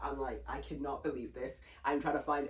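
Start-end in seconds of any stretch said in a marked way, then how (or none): 0.5-1.6 put-on tearful voice, quieter. Retelling being healed at church and speaking in tears. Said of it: "I'm now in tears".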